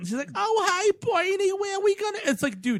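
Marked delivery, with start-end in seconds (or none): 0.3-2.2 put-on laid-on, broad New York accent, very high pitch. Mocking a movie character's overdone accent: imitating a broad New York accent. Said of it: "The broadest character I've ever seen, like, in terms of accent".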